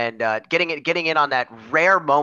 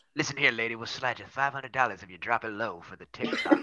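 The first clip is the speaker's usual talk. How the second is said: creepy movie narrator voice, much lower, quieter; 3 semitones lower, 9 dB quieter than usual. Speaker in a joking conversation, doing a creepy movie background voice. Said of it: "I like your creepy, like, movie background voice".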